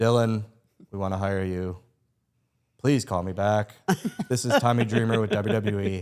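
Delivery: flat, slowed imitation. Retelling the voicemail he left offering you a job, do a monotone Tommy Dreamer impression. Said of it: "you know his monotone".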